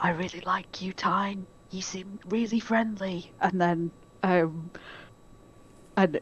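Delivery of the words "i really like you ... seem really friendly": soft, hushed half-whisper, in character. Voicing a character who secretly half-whispers a message: half-whispering in character. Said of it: "is just gonna whisper".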